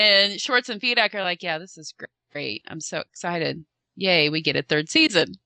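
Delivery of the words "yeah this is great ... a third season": hollow, fake, forced put-on excitement. Acting out how two men reacted to news of a third season: retelling fake excitement. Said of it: "Kind of faking the excitement".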